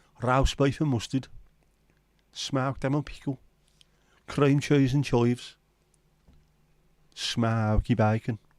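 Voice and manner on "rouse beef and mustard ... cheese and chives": put-on Birmingham accent, roast said as rouse. Reading out sandwich fillings: put-on Brummie accent. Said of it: "doing it in a Brummie accent".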